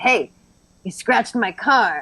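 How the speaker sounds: attitude-filled, sassy guy voice. Retelling a pre-recorded prank call message: imitating a sassy guy. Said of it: "this sassy guy, and he's like".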